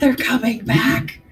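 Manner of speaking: loud stage whisper, pushed out to carry. Repeating an earlier in-character line for another player: loud whisper. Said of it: "I whispered really loud".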